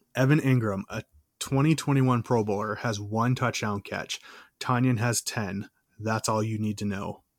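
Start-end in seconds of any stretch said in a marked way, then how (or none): none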